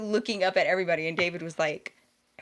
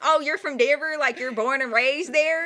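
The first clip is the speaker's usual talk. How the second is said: put-on thick Southern accent, pitched up; 7 semitones higher than usual. Retelling what a cousin said about their way of talking: thick Southern accent. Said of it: "their accents are definitely a lot thicker".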